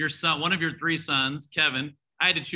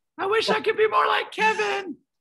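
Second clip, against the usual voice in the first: very high-pitched put-on little voice; 4 dB louder than usual. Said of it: "with a high voice".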